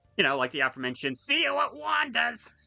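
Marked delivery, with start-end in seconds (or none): 1.2-2.5 raspy, high-pitched, slow delivery. Giving the chat an example of a vocal stim, in a Krusty the Clown voice. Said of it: "I sounded like Krusty the Clown saying that!".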